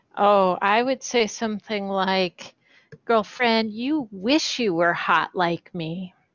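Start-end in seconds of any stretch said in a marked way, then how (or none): 3.1-6.1 cruel, catty, vicious mocking tone. Taunting an enemy in character during a fight: vicious mocking taunt. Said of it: "viciously mock Ovak here".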